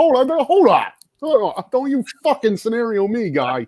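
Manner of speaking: very high-pitched, objecting voice. Retelling how a guest objected to something a host said: imitating Dave. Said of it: "He'd be like".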